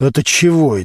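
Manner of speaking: ordinary delivery, nothing marked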